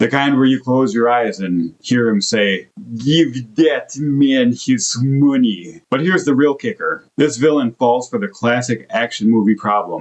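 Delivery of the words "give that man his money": put-on deliberate Russian accent, each word drawn out slowly. A reviewer imagining a line, in a John Malkovich Rounders Russian accent. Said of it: "Rounders style Russian accent".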